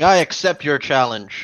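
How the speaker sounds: slow, deliberate, loud, drawn-out yell. In the game, a character steps forward and accepts a challenge: yelling. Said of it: "steps forward and yells in Halfling".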